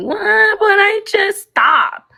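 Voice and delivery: put-on fake sobbing. Mocking the other speaker who was told to stop fake crying: imitating fake crying. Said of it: "you're sounding like you".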